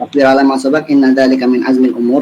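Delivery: normal talking voice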